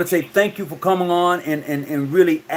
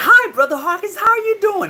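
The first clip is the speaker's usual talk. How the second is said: prim, very high-pitched voice; 14 semitones higher than usual. Retelling a phone call where Sister Jennifer greets Brother Hawkins, in her very proper voice. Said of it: "in this very proper voice".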